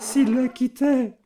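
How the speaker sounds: quavering, trembling, very high voice. A woman breaks off, lowers her eyes and continues as she rises, trembling voice. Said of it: "elle continua d'une voix tremblante".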